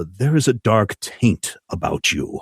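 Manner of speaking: hushed stage whisper. Voicing a host who leans in to a guest: whispering in character. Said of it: "he leans in and whispers".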